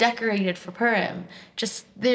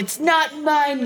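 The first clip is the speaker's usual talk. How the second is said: mock man yelling, much slower; 6 semitones higher, 3 dB louder than usual. Telling about a man at the post office, retelling his yell. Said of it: "Then he yells".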